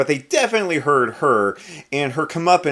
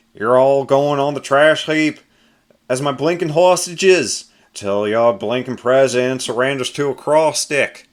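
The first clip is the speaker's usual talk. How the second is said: deliberately bad put-on Australian accent; 4 dB louder than usual. Reading a comic villain's threat to hostages: terrible australian accent. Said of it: "I know that was a terrible accent".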